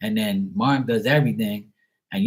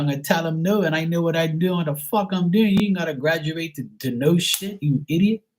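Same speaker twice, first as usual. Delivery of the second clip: higher-pitched voice; 7 semitones higher than usual. Retelling the reply given back to the dad: retelling own reply to dad. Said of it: "I said".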